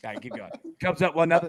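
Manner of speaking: ordinary talk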